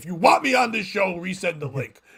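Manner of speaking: nasty, mean, pointed demanding tone. Quoting what someone said a minute before the show, mock-mean demanding voice. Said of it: "I'm putting that voice. ... I'm making it mean".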